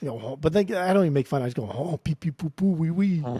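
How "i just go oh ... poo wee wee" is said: fake French accent, slower. Speaker showing how she does accents for fun, mock French accent. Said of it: "I do like a French accent".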